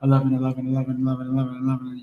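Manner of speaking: each eleven blurred into the next. Showing how eleven eleven sounds when said faster: fast, run-together elevens. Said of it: "if you say it faster".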